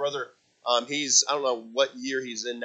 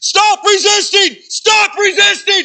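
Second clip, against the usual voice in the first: shrill, booming, very loud, high, drawn-out yell; 15 dB louder than usual. Retelling what a man yelled while rubbing his face into the floor, retelling a yell. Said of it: "I'm going to get loud".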